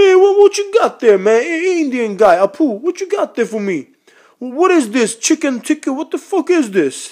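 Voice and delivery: squeaky, very high-pitched comic voice, pushed way up. Doing an impression of Tracy Morgan at an Indian restaurant: Tracy Morgan impression. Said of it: "I do a pretty good Tracy Morgan impression".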